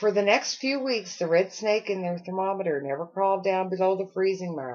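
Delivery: ordinary delivery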